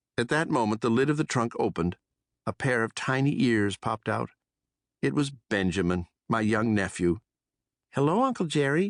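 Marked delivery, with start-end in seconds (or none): 8.0-8.9 squeaky, small, squeaking voice. A young mouse nephew pops out of a trunk to greet his uncle, squeaky small voice. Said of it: "he squeaked".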